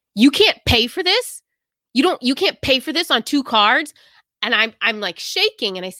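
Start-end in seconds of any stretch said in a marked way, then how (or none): 0.2-4.0 put-on aggressive, incredulous tone, pitched higher. Retelling a man's reaction when she needed a third card, retelling aggressive disbelief. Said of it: "And just so aggressive".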